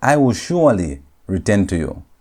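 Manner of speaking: plain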